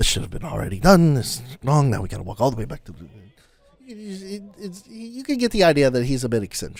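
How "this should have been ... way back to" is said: muttered under breath, lower and faster. A character turns and walks away, muttering under his breath. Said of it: "muttering to himself, like just under his breath".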